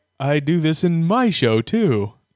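very slow, deliberate, every word drawn out. Imagining a cameo in the film, doing an Adam West impression. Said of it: "That was my Adam West".

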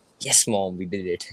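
ordinary talk

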